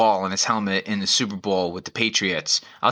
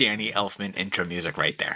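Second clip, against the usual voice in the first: ordinary talk, nothing marked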